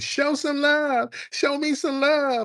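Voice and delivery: acted, high-pitched shrill yelling. Describing a man yelling from behind a velvet rope, retelling a yell.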